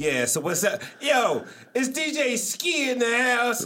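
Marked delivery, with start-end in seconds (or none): 1.0-3.6 very high, drawn-out radio DJ voice. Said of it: "that was a little funk flex from me".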